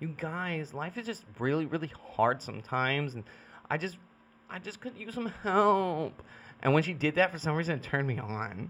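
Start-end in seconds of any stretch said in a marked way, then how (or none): 0.0-6.2 mocking valley girl voice, "help" drawn out. Retelling how she made fun of other girls, mocking valley girl voice. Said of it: "like a valley girl".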